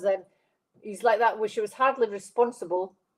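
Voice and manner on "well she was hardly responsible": ordinary talk, nothing marked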